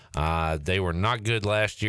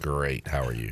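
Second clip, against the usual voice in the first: sad, downcast, very low voice; 7 semitones lower than usual. Greeted by the host and asked how they're doing, sounding sad. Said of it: "Why did you sound so sad".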